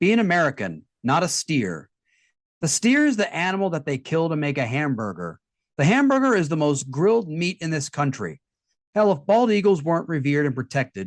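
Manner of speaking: usual speaking voice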